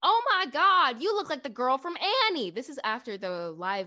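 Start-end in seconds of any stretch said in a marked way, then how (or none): 0.0-2.5 very high, loud, shrill blurted exclamation. Retelling what a girl who sat down next to her said, retelling a loud remark. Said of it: "she very loudly goes".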